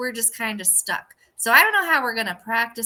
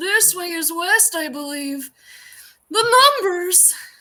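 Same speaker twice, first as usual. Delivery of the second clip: put-on very slow, pitched-up old man character voice; 7 semitones higher than usual. Playing a changeling who turns into the old man: impression of the old man. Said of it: "that was a really good impression".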